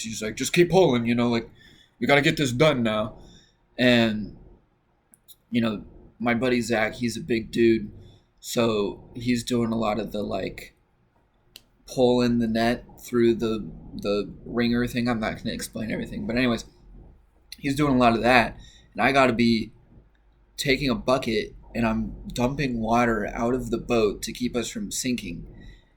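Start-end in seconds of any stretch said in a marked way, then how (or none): 0.3-3.2 stern, pressing voice. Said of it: "stern face".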